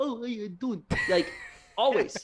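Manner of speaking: put-on speaking with an Italian accent. Bo pops his head out at the door, imitating Bo in an Italian accent. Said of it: "basically the exact same Italian accent you did".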